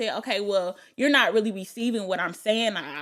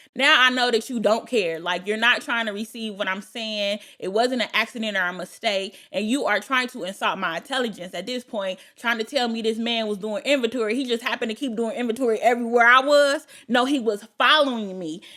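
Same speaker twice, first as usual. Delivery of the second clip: usual speaking voice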